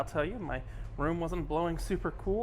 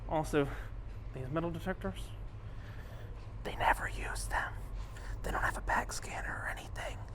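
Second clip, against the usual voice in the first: hushed whisper; 4 dB quieter than usual. Showing the ship's security near the guest services desk: whispering. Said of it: "I don't know why I'm whispering".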